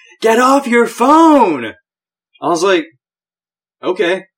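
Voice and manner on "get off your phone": acted raised, loud, high-pitched shouted yell. Retelling what she yelled at the speaker: retelling her yell. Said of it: "while she's yelling at me".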